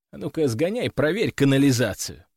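ordinary delivery

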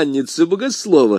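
ordinary delivery

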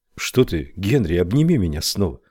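plain reading voice

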